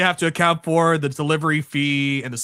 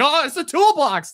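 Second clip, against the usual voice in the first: very high, drawn-out, spooked, freaked-out delivery; 10 semitones higher, 3 dB louder than usual. Retelling a wrestling flashback scene, imitating a freaked-out Drew McIntyre. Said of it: "Drew McIntyre's all, like, freaked out".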